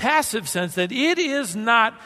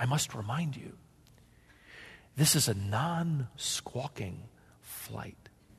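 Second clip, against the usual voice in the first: very quiet, serious, hushed, low voice; 9 semitones lower, 13 dB quieter than usual. Quoting a woman leaning over squawking children, retelling her serious, quiet voice. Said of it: "said in a serious, quiet voice".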